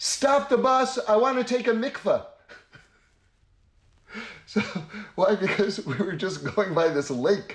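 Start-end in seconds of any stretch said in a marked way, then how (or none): 0.0-2.3 loud high-pitched yelling. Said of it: "stands up and yells".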